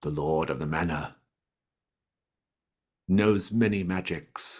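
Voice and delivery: hushed, secretive, conspiratorial voice. Narrator voices a creature after it calms down, in a hushed conspiratorial tone. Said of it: "it begins to speak in kind of a somewhat hushed conspiratorial tone".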